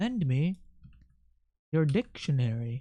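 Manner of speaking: soft, witch-like cadence. Streamer drawing, repeating a phrase in a specific cadence, witch-like voice. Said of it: "Do I sound like a witch doing that?".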